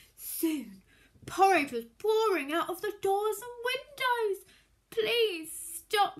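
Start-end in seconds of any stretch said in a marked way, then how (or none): 4.9-6.2 begging, pleading, imploring. A boy pleads with a magic pot that keeps pouring porridge, begging. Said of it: "begged the boy".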